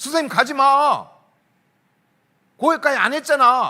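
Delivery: put-on loud, slow, angry yell like a kid.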